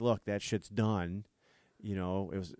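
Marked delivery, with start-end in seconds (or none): none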